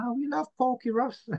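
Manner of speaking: high-pitched female voice. Retelling what a woman said about Porky Ross, imitating a woman speaking. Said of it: "she's going".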